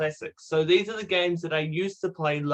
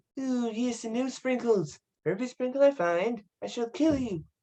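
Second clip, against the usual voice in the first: put-on high, pitched-up cartoon baby voice; 6 semitones higher, 3 dB quieter than usual. Taking a turn in an impersonation game, doing a Stewie Griffin impression. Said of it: "Let's see if we can impersonate Stewie Griffin".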